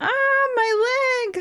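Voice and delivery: very high, wailing, pained scream of agony. Narrator voices a woman clutching her injured leg, screaming in pain. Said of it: "She's screaming".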